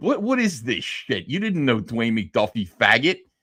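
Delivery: mock confrontational, aggressive, in-your-face challenging tone. Retelling going over to a man, the speaker acts out confronting him: retelling a confrontation. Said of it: "go over there to confront him and be like".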